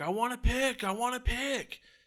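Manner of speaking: put-on very high, shrill, drunken yelling. Acting out a drunk guy right behind them wanting a pick, retelling a drunk yelling. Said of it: "he's like yelling in my ear like".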